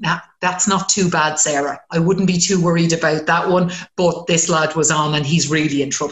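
ordinary delivery

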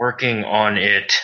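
grudging words spoken through clenched teeth. Answering instructions to sneak past an enemy in a game, through gritted teeth. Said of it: "I will say through gritted teeth".

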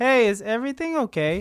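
mock unbothered, very calm, mild, easygoing tone. Retelling how Kevin answers a yelling fight: imitating Kevin, very calm. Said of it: "Like, very calm".

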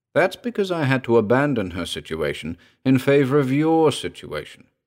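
ordinary talk

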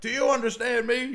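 very high, very loud drill-sergeant shouting. Recapping a story and acting out a character's line, drill-sergeant tone. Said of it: "Like a really sort of drill sergeant um, tone to it".

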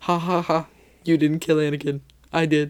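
gloating yet sad half-human villain voice. Imitating a scene, sad half-Anakin half-Vader voice. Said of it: "in the half Anakin, half Vader, like, sad voice".

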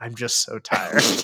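acted, extremely sad voice. Retelling what a man said on camera, imitating the saddest voice. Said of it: "say with the saddest voice".

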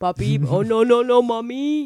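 attempted put-on Haitian accent. Showing the others all you know of the accent, in an attempted Haitian accent. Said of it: "when I do like try to do a Haitian accent".

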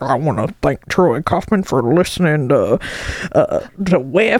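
low, down-home country honky-tonk radio voice. Imitating an old-timer radio host giving the speaker's dad a shout-out: country honky-tonk voice. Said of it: "kind of country honky-tonk voice".

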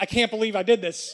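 ordinary talk

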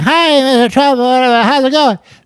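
put-on, very high teen girl voice. Acting out a daughter greeting a guest: imitating a fourteen-year-old girl. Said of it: "That's how a fourteen-year-old girl sound".

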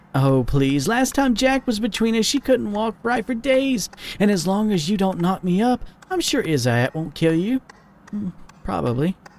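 light, playful teasing. In the story, a woman teases the man she is with: teasing. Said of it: "She teased".

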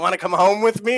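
put-on toothless old woman voice. Retelling an older woman's offer at a bar: imitating older woman with teeth out. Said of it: "she pulls her teeth out, and she goes".

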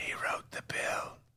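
slow, hushed mock whisper. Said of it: "Why are we whispering?".

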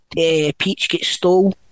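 ordinary talk

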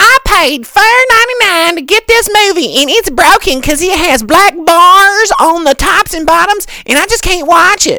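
very high, shrill, shrieking, screechy pterodactyl squawk. Retelling a customer's complaint at a rental counter: screechy pterodactyl voice imitation. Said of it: "Just comes into pterodactyl voice".

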